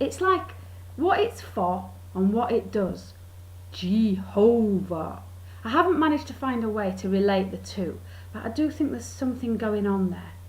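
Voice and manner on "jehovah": very slow "Jehovah", middle syllable stressed. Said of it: "you kind of say it real slow and you emphasise the middle bit".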